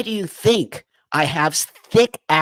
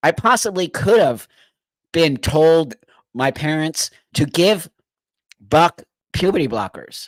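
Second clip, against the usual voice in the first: tearful, speaking through tears. A speaker explaining why they are crying; crying while talking. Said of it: "I'm crying for those kids".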